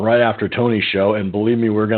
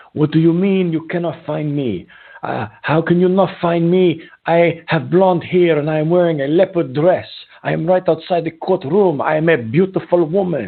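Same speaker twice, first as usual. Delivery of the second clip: put-on high Brazilian woman's accent; 7 semitones higher than usual. Recounting an Uber passenger's reply when you couldn't find her, imitating a Brazilian accent. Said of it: "she ends up with her accent".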